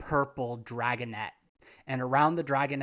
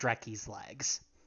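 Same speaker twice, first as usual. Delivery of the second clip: ordinary delivery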